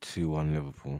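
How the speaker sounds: mumbling under breath. Giving a score prediction when asked, muttering it. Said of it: "Why are you muttering it?".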